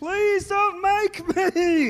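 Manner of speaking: high, very slow, sobbing, begging. Narrating a fight, the storyteller voices Barry begging, Barry crying and pleading. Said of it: "And he's crying".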